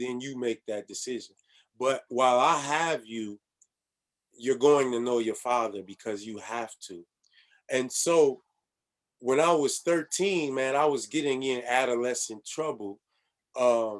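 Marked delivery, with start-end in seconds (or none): none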